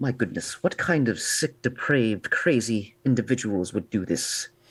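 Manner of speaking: voiced, half-whispered stage whisper. Retelling how he half-whispered over the dead during a moment of silence, under his breath. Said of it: "he would whisper under his breath".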